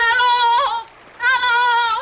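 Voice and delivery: high, loud screaming. Stranded and making smoke so they will be seen, screaming for help. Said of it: "Stop all that screaming".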